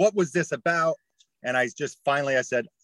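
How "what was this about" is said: very angry, irate, furious voice. Retelling how university executives questioned them in a meeting: imitating an angry question. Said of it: "very angrily said".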